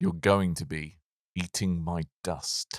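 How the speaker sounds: cool, badass action-hero movie-tagline delivery. Delivering a one-liner into the camera while using the block button: cool action one-liner. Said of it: "would you like to say a really cool".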